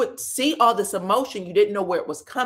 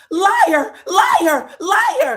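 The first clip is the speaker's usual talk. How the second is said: put-on very high, very loud, shrill childish tantrum shriek; 10 semitones higher, 9 dB louder than usual. Retelling an argument at a barbecue, imitating Tisha screaming childishly. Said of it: "Tisha starts screaming".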